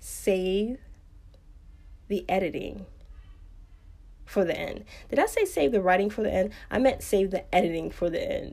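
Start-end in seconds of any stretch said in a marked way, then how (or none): 0.0-4.9 soft, slow, careful delivery, broken into halting pieces. A writer repeats key advice to listeners, saying it again slower and carefully. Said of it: "Let me say that again a little slower".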